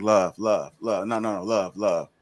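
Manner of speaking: slow, talking-down, patronising, condescending tone. Acting out how some women say love: imitating condescending women. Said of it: "in a condescending manner".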